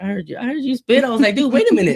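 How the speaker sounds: high, fast, excited, amazed mock panic.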